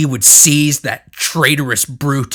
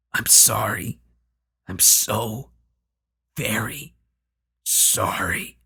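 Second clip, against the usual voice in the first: horrible, scratchy, rasping, pained, halting mumble; 3 semitones lower, 8 dB quieter than usual. Narrator reads the horror mumbling to itself in a horrible, scratchy, pained voice. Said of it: "mumbling to itself in its horrible, scratchy, pained voice".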